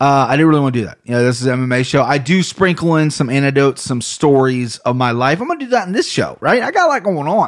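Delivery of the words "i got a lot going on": Ohio accent, pitched up. Describing what goes into the show, slipping into an Ohio accent. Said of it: "I sound like I'm such from Ohio right there".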